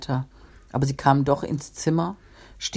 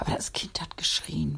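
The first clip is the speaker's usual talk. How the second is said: whispering, much quieter; 8 dB quieter than usual. A woman in the story speaks up about the child, whispering. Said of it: "flüsterte die Frau".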